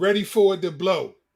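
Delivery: ordinary talk, nothing marked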